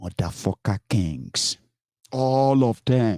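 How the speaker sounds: slow, deliberate, each word laid down. Deliberately repeating an insult about kings, saying it slowly. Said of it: "I'm saying it slowly because of children".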